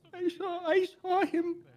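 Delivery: trembling, close to tears.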